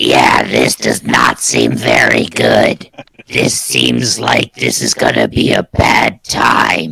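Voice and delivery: put-on very low, creaky, throat-scraping goblin accent. Player tries the line in Goblin instead of common: speaking in Goblin. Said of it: "let me try this in Goblin".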